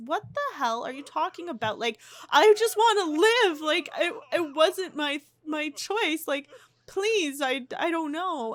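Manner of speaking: scared, high stammering tone. Recounting Vidkund answering Loki, acting out a scared plea. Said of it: "he's really scared".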